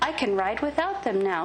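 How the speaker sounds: ordinary delivery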